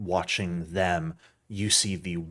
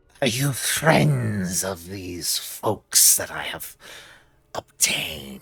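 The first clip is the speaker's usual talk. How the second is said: creature voice full of hiss on every s. Game master voices the creature Cyrus addressing the party, hissing Cyrus voice. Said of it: "in this sort of hissing, uh, um, kind of sibilant voice".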